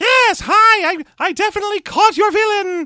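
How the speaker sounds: squeaky lich voice, very high and loud. Showing how the actor sounds like someone trying a D&D lich, a very squeaky, high-pitched Bud Cort impression. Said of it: "He does a very squeaky, high-pitched thing".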